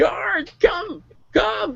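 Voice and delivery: very high-pitched, panicked scream. Voicing a priestess who calls the guards for help: screaming for the guards. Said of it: "she screamed".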